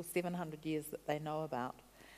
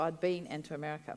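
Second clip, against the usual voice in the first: ordinary talk, nothing marked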